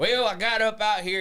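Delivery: put-on Mexican accent trying to sound country. Speaker retells his dad's news interview, in a Mexican accent trying to sound country. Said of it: "he's got this Mexican accent".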